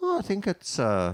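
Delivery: put-on swooping, sing-song Northern Irish accent. Retelling what Roy Walker asked on a set, in his Northern Irish accent. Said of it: "It speaks in this Northern Irish accent".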